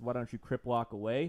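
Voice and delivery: normal talking voice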